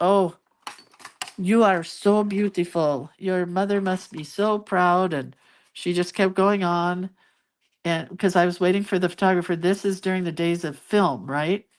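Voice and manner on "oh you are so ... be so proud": put-on thick, heavy French accent, laid on, slow. Retelling a woman's compliments while waiting for the photographer, in a thick French accent. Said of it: "in a very thick French accent".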